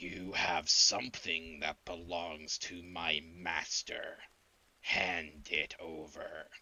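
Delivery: deep, guttural voice of a huge monster. A game narrator describes a huge creature, then speaks as it in a guttural, deep voice. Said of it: "It speaks with a guttural, deep voice".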